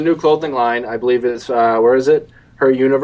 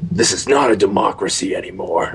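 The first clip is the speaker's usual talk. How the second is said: hoarse, raspy put-on voice; 5 semitones lower, 3 dB quieter than usual. Recapping a show's second season finale, quoting Rick: hoarse Rick impression. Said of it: "It just sounds like you need a lozenger".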